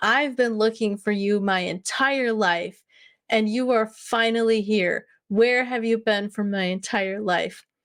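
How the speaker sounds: dry, tongue-in-cheek, sarcastic, joking tone. Retelling own words said to a being of love: retelling a sarcastic joking remark. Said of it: "kind of sarcastically and jokingly".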